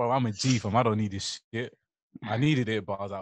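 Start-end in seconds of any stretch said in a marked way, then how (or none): none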